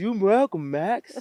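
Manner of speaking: shrill, very high-pitched, loud voice. Retelling what a teammate said on the sideline, impersonating Joey's voice. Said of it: "me trying to impersonate my Joey voice".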